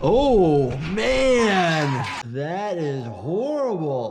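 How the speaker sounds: gasping in shock. Watching theme park injury footage, reacting with a shocked gasp. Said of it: "(Jordan gasps)".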